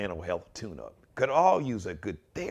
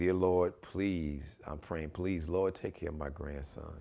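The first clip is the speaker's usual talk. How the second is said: mock-reverent, humble, hushed acted tone; 4 semitones lower, 3 dB quieter than usual. Contrasting how the grandparents prayed, acting out the grandmother; imitating humble reverent prayer. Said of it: "in a very humble, reverent way".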